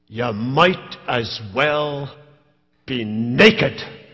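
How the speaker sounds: rather gruff, low Scottish voice, very slow drawl. Retelling what a man said after looking him up and down, gruff scottish voice. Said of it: "in his rather gruff Scottish voice".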